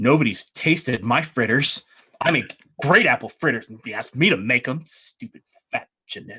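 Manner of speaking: petty back-and-forth bickering. Playing a game character during a squabble at the table, petty bickering. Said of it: "general bickering back and forth".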